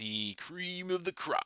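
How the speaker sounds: terrible high, slow, growling impersonation. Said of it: "that was a terrible Macho Man impression".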